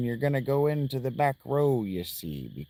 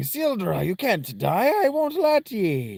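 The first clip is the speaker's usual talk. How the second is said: put-on pirate voice, higher; 8 semitones higher, 3 dB louder than usual. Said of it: "she sounds like a pirate".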